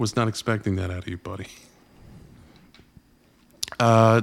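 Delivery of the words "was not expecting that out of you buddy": choked up, fading to soft. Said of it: "hold on, I'm getting choked up".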